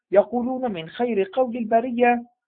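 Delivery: ordinary delivery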